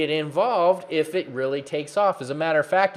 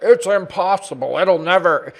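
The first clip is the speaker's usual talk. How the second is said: put-on loud, derisive, mocking naysayer voice; 3 semitones higher, 7 dB louder than usual. Mimicking people who say it's impossible, in a mocking voice. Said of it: "I'm using that voice like".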